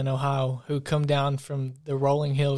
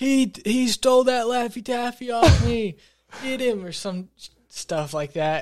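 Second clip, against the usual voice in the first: very high, stretched-out, drawn-out yelling; 9 semitones higher, 3 dB louder than usual. Recounting a school trip, the speaker acts out a man accusing them of stealing: imitating a man yelling. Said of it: "he's yelling".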